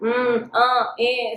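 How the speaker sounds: nervous, halting speech stumbling over filler sounds. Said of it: "सारी nervousness है ना कि हाय इंग्लिश बोलते हुए".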